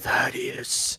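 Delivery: strange, eerie, creepy put-on voice. Speaking as the demon to thaddeus, use a real weird, creepy voice. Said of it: "I'll make a real, real weird, creepy voice".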